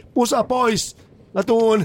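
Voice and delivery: very high, shrill shouted yell. Recalling what they once shouted from the mailbox, retelling a shout. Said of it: "mä huusin tota".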